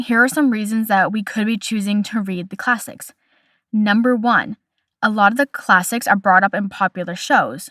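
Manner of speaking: normal talking voice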